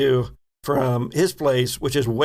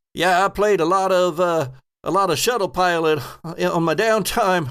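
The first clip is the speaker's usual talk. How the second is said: calling out loudly, pitched up; 6 semitones higher than usual. An ensign in the game hears the players and yells back without turning, yelling. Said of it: "doesn't turn but yells".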